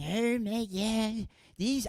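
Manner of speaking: put-on slow, dragged-out elderly voice. A speaker finally tries the bit he set up: old person impersonation. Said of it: "an impersonation of an old person saying".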